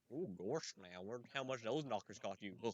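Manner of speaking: silly, goofy cartoon dog character voice. In VR chat, talking to a woman next to him: Goofy voice. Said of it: "I was doing Goofy voice".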